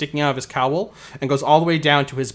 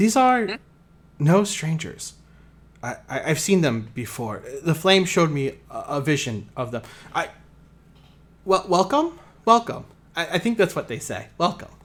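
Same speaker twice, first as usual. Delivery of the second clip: put-on girl voice; 3 semitones higher than usual. A game master voices Keeper Jail welcoming the outsiders, Jail in a girl voice. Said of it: "I need a girl voice".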